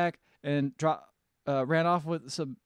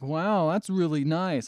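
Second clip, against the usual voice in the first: acted-out sarcastic, unimpressed, insincere praising tone; 4 dB louder than usual. Retelling a reaction to a competitive eater at dinner, retelling a sarcastic remark. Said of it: "all sarcastically".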